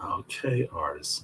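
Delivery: seductive, sultry tone, low and soft. Repeating what she said to him: retelling in a sultry voice. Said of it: "say it in the in the sultry voice".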